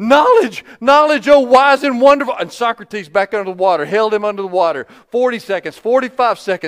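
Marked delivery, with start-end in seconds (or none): 0.0-2.4 put-on gasping stammer, much higher and louder. Telling a story of a young man held underwater, acting out a gasping stammer. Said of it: "He stammered".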